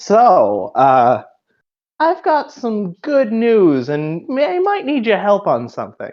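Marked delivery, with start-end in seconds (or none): 2.0-6.1 put-on grandma voice, higher pitch. Voicing grandma Mary greeting Gwen at breakfast: Mary voice. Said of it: "slipping into the Mary voice".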